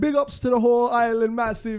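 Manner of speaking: put-on English in a Jamaican patois accent. Asking about people doing patois, quoting Tom Hanks' son: imitating Tom Hanks' son's patois.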